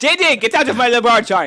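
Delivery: shrill, very high, full-volume shout. In the game, ordering Didi out of the laboratory: loud.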